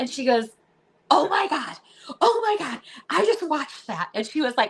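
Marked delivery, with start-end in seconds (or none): 1.1-4.1 play-acted, high, swooping, excited, gushing, starstruck outburst. Retelling a waitress recognizing them at dinner: imitating someone freaking out. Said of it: "freaking out".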